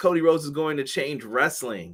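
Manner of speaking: ordinary talk, nothing marked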